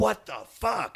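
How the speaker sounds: very high, shrill, rough, raspy screaming. Telling his arrest story, the speaker quotes the cop: retelling a cop screaming. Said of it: "start screaming like".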